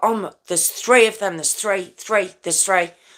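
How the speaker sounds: put-on distressed radio voice. Retelling a policeman's radio call from a crash scene: imitating a distressed policeman. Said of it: "You can hear the absolute distress".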